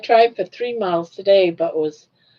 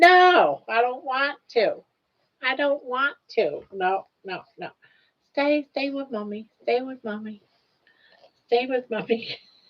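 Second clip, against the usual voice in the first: put-on dog voice, much higher; 5 semitones higher, 4 dB quieter than usual. Trying to put the dog in a basket, voicing the dog's reply. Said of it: "She's like".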